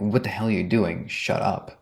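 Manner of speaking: acted whisper. Speaker retells what he said to a man in the audience, retelling a whisper. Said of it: "I'm whispering to this guy".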